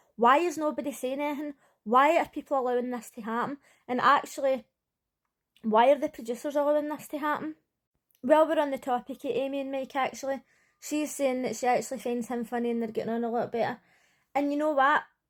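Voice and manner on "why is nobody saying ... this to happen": usual speaking voice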